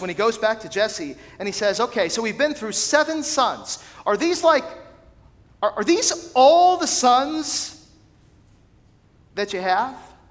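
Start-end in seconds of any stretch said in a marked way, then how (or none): 1.8-10.0 play-acted, fed-up, exasperated tone, at wits' end. Retelling a story, quoting one man speaking to another, acting out frustration. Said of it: "you can almost hear the frustration in Samuel's voice".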